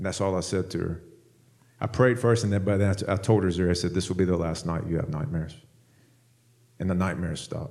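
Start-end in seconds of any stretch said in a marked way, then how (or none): 3.9-5.5 put-on whisper, lower and quieter. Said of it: "I just said it in a whisper".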